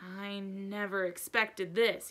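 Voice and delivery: low, anxious, worried, troubled voice. Reading a book aloud, a character's reply: low, worried voice. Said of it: "he said in a low, worried voice".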